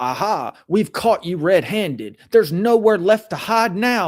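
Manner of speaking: triumphant gotcha voice. Show how Zach's tone turns to accusing, imitating a rising aha, caught-you voice. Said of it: "Zach's voice almost rises into".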